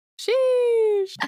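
sheesh said in the trendy slang intonation. Showing a guest who isn't on TikTok how the slang word is said, TikTok 'sheesh' inflection. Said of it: "you have to say it like this".

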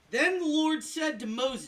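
yelling, very loud, high-pitched. Reading aloud from Exodus fourteen to the group: yelling. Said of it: "You don't have to yell".

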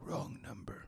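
breathy whisper in a superhero character voice. Quoting a line from the movie being watched: Batman voice. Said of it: "first real use of Batman voice".

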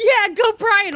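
very high, squealing, excited cheering. Retelling own cheer when a friend took their pick: imitating own excited cheer. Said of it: "I was all excited. I'm like".

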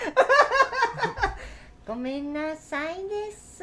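very high, very slow cartoon little-kid voice. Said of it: "お前のタラちゃん".

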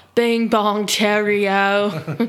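put-on british accent. Introducing a segment about a trip to London, in a put-on British accent. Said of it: "Your accent is awesome".

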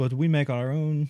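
put-on Russian accent. Quoting what she said, the speaker slips into the accent again: Russian accent. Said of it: "I did it again".

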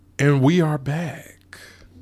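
smooth jazz radio host delivery. Podcast host returning from a short break, in a smooth jazz voice. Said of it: "Had to hit y'all with that smooth jazz voice".

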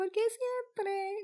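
heavy, mad sarcasm in a very high voice. Imitating Lola asking something, being mad sarcastic: Lola voice, mad sarcastic. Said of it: "she's being mad sarcastic".

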